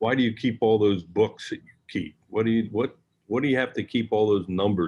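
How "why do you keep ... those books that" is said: ordinary delivery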